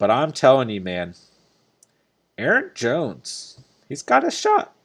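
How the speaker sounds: voice breaking on words. Speaker telling the guys a player could score big, voice cracking. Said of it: "You hear the cracking in my voice".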